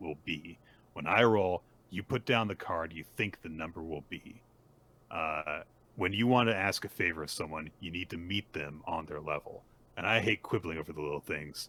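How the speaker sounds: ordinary delivery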